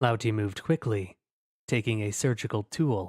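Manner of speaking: plain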